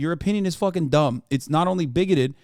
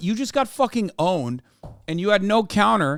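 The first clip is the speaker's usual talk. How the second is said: plain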